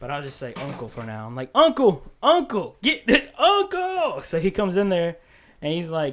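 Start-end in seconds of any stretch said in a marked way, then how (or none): 1.5-4.2 very high, very slow, swooping, acted-out drawn-out yell. Retelling calling for help from the restroom: retelling a yell for help. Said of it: "So I'm yelling for my uncle".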